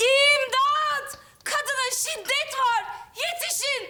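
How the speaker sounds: feeble, very slow, high, drawn-out weak shout. Told to shout, a young woman starts calling for help, shouting for help. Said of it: "bağırıyorum".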